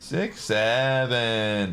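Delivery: really whiny and high, stretching out "seven". Demonstrating the way you're supposed to say it, really whiny. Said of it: "The way you're supposed to say it is like really whiny".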